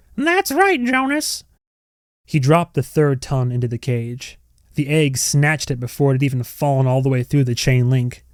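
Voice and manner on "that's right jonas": high-pitched hand-puppet voice. Narrator reading a man making a severed tongue answer him: high-pitched puppet voice. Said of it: "in a high-pitched voice said".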